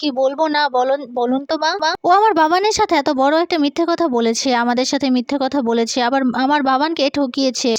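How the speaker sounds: ordinary delivery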